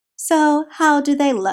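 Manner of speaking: put-on, slow, mannered, affected voice. Reading Jacob asking Zach how the marks look, in an affected voice. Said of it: "He asked in an affected voice".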